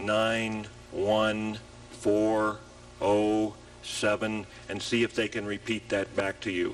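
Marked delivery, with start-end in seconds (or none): 0.0-4.5 bored, flat monotone, very slow, one word per second. Reading numbers for someone to repeat back, boring monotone, one per second. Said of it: "in your most boring, monotone, one per second voice".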